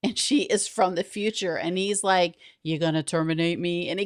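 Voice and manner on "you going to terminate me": put-on killer robot voice. Retelling how her childhood friend reacts to a time traveler, in Terminator voice. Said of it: "in the Terminator voice".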